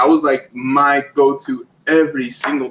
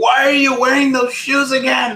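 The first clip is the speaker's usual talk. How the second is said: very high, shrill, scolding put-on yell; 10 semitones higher than usual. Imagining Grace scolding over worn shoes: imitating Grace yelling. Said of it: "yelling at me, like".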